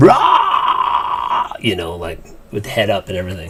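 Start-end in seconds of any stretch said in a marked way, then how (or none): 0.0-1.5 screaming. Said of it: "I would just picture him screaming".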